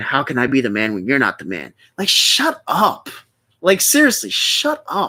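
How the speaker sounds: heated, worked-up rant, low and swooping. Speaker ranting about a guy who keeps asking viewers to subscribe, heated. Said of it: "I'm sorry I'm getting so heated".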